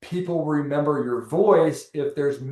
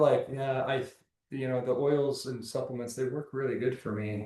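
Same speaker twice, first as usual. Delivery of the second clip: timid, halting, unsure, quiet, unconfident delivery; 2 semitones lower, 10 dB quieter than usual. Showing how speaking without confidence sounds, quiet, unconfident. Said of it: "my voice doesn't sound very confident, right? It's like kind of really quiet".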